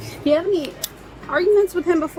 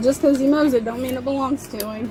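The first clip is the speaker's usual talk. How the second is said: ordinary talk, nothing marked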